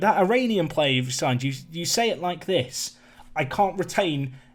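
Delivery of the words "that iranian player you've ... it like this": usual speaking voice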